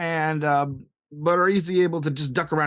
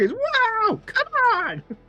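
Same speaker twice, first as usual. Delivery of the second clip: screaming, much higher. Narrating a combat scene, voicing the enemy's reaction, screaming. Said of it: "He screams".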